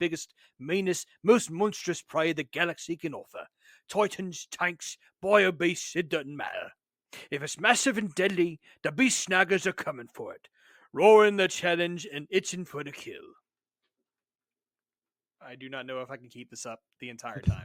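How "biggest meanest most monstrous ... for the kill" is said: put-on orc reading voice. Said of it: "normal English and then orcified it".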